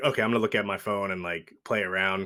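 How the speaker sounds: normal talking voice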